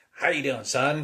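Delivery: acted, very loud, high, delighted and overjoyed. Retelling how a father greeted his son: imitating a grinning, happy greeting. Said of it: "he was smiling, grinning".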